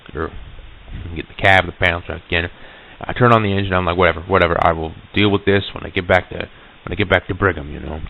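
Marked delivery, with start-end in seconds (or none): none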